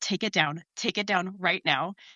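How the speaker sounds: intense, urgent half-whisper under the breath. Retelling warning a colleague quietly from behind: imitating an under-breath warning. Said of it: "under my breath".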